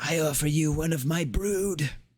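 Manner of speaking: high-pitched whispering. A second egg appears, and she speaks to you, whispering. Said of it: "she will whisper out".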